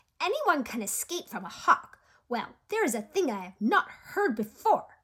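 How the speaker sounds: thin, high, scratchy little voice. Narrating a story, a voice overheard talking about Jed, high scratchy voice. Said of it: "said a high and scratchy voice".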